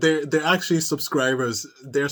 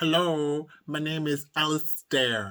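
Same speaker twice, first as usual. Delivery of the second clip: silly, slow, stupid-sounding put-on voice; 4 dB quieter than usual. Recalling a night of staying in character, the speaker shows the stupid voice they picked. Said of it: "this is the voice I picked".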